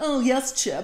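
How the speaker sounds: put-on, posh, preppy upper-class way of talking. Planning a pretend house-hunting outing in old outfits, showing the put-on preppy voice. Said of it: "We're gonna talk like this".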